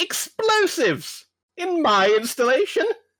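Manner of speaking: very high, slow, indignant angry gnome voice. Describing the way he talks, in an incensed gnome voice. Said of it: "like an incensed like like gnome".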